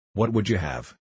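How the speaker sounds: plain reading voice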